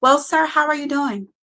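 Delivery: polished professional voice. Explaining how they don't want to talk at home, the speaker puts on a professional-like voice. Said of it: "professional like voice".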